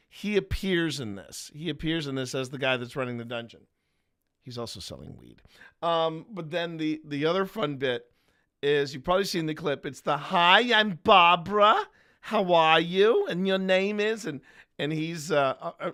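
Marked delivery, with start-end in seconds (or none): 10.2-14.3 put-on very drawn-out, slow, loud, high Bronx accent. Recalling a clip from a show, the speaker does a Barbara impression, Bronx-sounding. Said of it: "that sounds more like she's from the Bronx".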